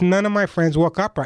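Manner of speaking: ordinary delivery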